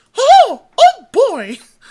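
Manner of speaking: squeaked out, high and loud. Showing how a cartoon character says a line: Mickey Mouse voice. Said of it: "the way Mickey does it is".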